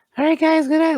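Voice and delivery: squeaky, very high little pony voice. Retelling how he voiced a toy horse at bedtime prayer, high-pitched little horse voice. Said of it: "he goes high for it".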